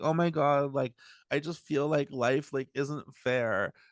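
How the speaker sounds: play-acted, tearful, sobbing delivery. Retelling a woman filming herself on the subway, imitating someone crying. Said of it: "she's just like crying and she's like".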